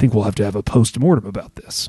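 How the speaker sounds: really deep, low-pitched male voice. Quoting a guy who walked by halfway through an event, imitating a really deep voice. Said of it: "a guy who had a really deep voice".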